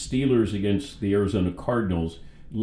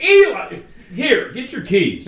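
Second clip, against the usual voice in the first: put-on shout, higher and louder; 12 semitones higher, 8 dB louder than usual. Retelling calling to Eli in front of a huge crowd: retelling own yell. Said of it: "I have to yell".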